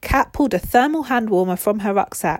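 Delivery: ordinary delivery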